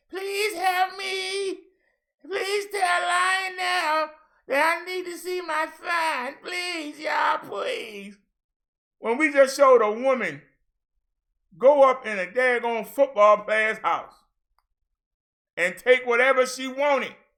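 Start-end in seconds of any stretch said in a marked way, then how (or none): 0.1-8.1 mock begging voice, high and slow. Mocking how the other person begged online for help: mocking imitation of begging. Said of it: "I wasn't online begging for nobody to help me. Like you was".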